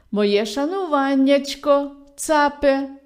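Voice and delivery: glad, cheerful, joyful calling voice. The fox, down in a well, greets the goat above, calling out joyfully. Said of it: "І гукнула радісно".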